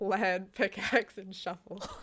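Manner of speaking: talking through laughter. Listing Minecraft tools to another speaker, laughing while talking. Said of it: "Are you laughing?".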